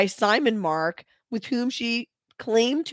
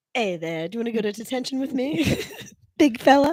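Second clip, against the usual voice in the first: put-on old-timey 1920s movie-style voice. Acting a line from a 1920s-version Breakfast Club play, old-timey 1920s voice. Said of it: "they talk in the old-timey voice".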